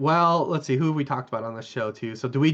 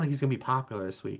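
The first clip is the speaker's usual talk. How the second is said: hushed, under-the-breath half-whisper; 2 semitones lower, 7 dB quieter than usual. Naming a player who may go unpicked this week: half-whispering. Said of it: "You whispered that".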